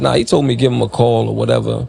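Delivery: ordinary delivery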